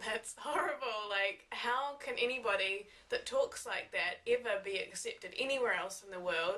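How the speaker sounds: ordinary talk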